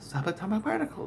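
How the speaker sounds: cheerful, soft, breathy little whisper. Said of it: "she said it really happy".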